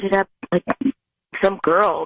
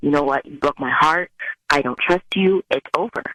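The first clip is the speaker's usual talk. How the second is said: firm, strong tone, lower; 4 semitones lower than usual. Retelling a sister ending things with a cheating partner: imitating someone being strong and firm. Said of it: "she was strong about it".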